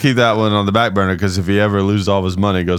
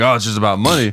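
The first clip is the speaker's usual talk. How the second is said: usual speaking voice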